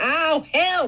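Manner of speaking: loud, high-pitched yelled cry of pain. Mocking a person being arrested, the speaker does mock yelling for help. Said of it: "was yelling".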